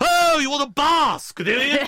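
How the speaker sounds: mock booming, very high, loud, gregarious mother-hen voice. Describing a type of shop assistant, speaker imitates her: loud mother-hen voice. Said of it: "she speaks like this in such a loud voice".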